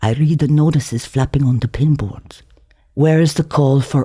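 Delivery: ordinary delivery, nothing marked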